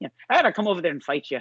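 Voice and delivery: high, angry Irish brogue, thrown out hot. Act out a boxer saying he will come and fight, in a put-on angry Irishman voice, channeling McGregor. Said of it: "I don't know why I'm making him sound like that".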